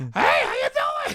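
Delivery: very high, cartoonish dog voice. Retelling going out onstage after the warm-up, like a cartoon dog. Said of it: "Just like a cartoon dog".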